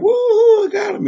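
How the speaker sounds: play-acted very high, loud, gleeful cheer through laughter. Retelling a movie scene where the shooter gloats: imitating someone laughing while talking. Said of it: "Fun Boy is, like, laughing".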